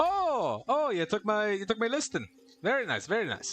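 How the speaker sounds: bad put-on Irish accent, high and swooping. In a comedy scene with another performer, speaking in a bad Irish accent. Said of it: "I'm trying my best to do an Irish accent".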